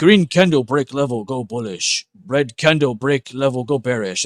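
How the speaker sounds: loud, slow, scornful, dim caveman-style speech. Speaker makes fun of simplistic chart reading in trading: mocking caveman talk. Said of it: "I always make fun of it saying".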